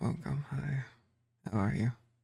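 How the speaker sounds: soft, drowsy, nodding-off sleepy voice. Asked to talk as if about to fall asleep, greeting the listener sleepily. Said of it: "Talk like you're about to fall asleep".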